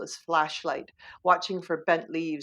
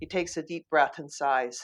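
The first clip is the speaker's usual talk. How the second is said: ordinary delivery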